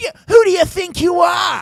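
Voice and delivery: shrill, blaring, very high, loud bully-like taunting voice. Imitating how every bully talks to a kid: kid's bully voice. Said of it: "any bully for a kid is always".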